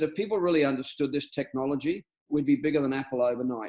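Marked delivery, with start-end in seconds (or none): none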